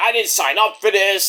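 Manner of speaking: angry wrestler-style yell. Retelling a wrestler yelling at the boss in his office: imitating MJF yelling. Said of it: "he starts yelling at Tony about the match".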